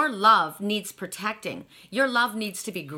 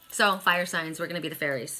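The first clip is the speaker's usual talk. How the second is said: normal talking voice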